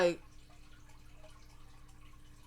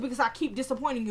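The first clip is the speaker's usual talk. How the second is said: ordinary delivery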